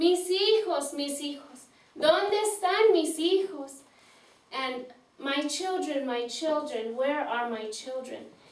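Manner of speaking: ordinary talk, nothing marked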